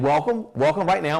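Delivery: ordinary delivery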